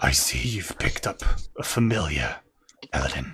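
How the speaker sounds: very deep, quiet, gristly, gravelly growling voice. A character addresses a player's character, quiet, gristly, growly voice. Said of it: "speaks quietly, but with this gristly, growly voice".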